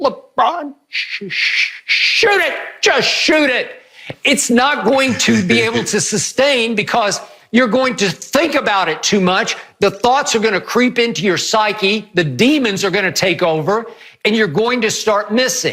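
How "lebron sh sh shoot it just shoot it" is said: play-acted stammering, high, drawn-out pleading voice. Speaker reenacts yelling at a player on tv to shoot; retelling screaming at tv. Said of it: "And I'm screaming at my T V".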